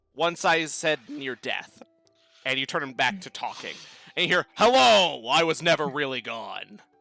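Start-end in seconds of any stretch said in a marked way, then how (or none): 4.6-6.8 talking-box voice, louder and slower. Explaining a game switch, speaker shows what you hear: Dave the talking box voice. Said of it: "Is that box talking?".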